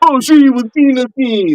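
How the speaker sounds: put-on Virgin Islands accent. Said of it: "talk that Virgin Island stuff".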